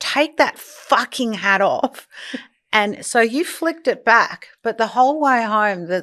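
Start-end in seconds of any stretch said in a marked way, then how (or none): 0.0-2.1 put-on angry voice. Retelling ordering someone in the car, imitating an angry order. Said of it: "I'm so angry".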